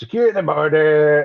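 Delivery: put-on New York accent. A Southerner makes fun of how Trump talks, mocking Trump's accent. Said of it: "Does anybody know what that accent is?".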